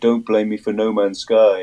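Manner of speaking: mocking, put-on stupid, silly voice. Retelling what someone behind them at a gig said: imitating a put-on stupid voice. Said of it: "put on some stupid voice and say".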